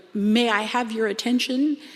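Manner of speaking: put-on courteous, sweet, charming French Canadian accent. Recounting an RCMP officer addressing everyone at Durant's Lake beach, charming French Canadian accent. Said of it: "in the most charming French Canadian accent".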